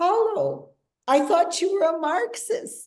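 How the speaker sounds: amazed, surprised tone.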